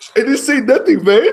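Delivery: very high put-on Mexican accent. Retelling a fight, voicing the man pushed against the wall, imitating a Mexican accent. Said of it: "That's exactly how he sounded".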